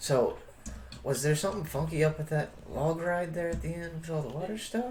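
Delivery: hushed voice, pitched slightly high. In a crowd, a player character asks a companion a question in a hushed tone. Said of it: "in a hushed tone".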